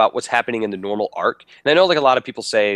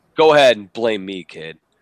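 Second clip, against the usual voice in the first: imitated sarcastic tone; 2 semitones lower, 3 dB louder than usual. Acting out a game character's line for another speaker, imitating a sarcastic tone. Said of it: "I think he said that sarcastically".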